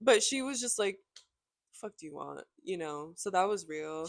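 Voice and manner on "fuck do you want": low, emotionless, flat deadpan delivery. Retelling a roommate's reply to a stranger at a bar: imitating a deadpan roommate. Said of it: "She showed no emotion".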